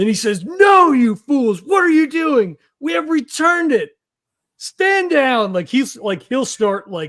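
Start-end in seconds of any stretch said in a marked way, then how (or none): 0.4-5.5 very high, shrill in-character yell. In a tabletop game, a player voices his character turning on the others, yelling. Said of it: "he turns and yells".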